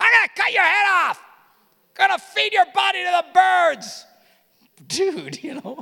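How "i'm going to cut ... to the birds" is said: very high, shrill, very loud screaming. Speaker describing a gutsy guy yelling at another guy, imitating someone yelling. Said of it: "He's yelling at this guy".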